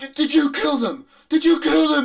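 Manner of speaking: very high, loud, pressing insistent demanding tone. Voicing the same character confronting the players: demanding. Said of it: "He demands of you".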